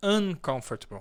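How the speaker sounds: "uncomfortable" with stress on first syllable "un". English lesson in Portuguese, uncomfortable with stress on un. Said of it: "A ênfase na, na pronúncia vai ser no un".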